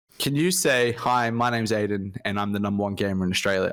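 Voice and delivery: ordinary talk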